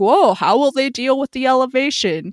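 high, exclaiming sports-commentator voice. Retelling what soccer commentators said about elevation: imitating sports commentators. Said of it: "commentators are like".

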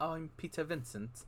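very proper, polished, hushed soft voice. Describing a late night horror host's manner: very proper Peter Vincent voice. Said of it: "he was more like, very proper".

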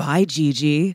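whispered voice. Retelling how a girl whispered in their ear: imitating a whisper. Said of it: "whispers in my ear".

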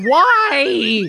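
high, whiny, complaining voice. Co-host made by the others to use a whiny voice, whiny voice. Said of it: "Making me use my whiny voice".

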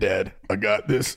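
put-on deep voice. Speaker acting out the son talking to his dad, in a put-on deep voice. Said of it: "Why did your voice get so deep?".

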